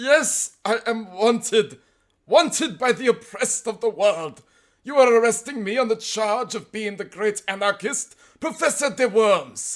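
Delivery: loud, very high put-on German accent. Told by a policeman that he is wanted, the narrator cries out in a high german accent. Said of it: "cried in a high German accent".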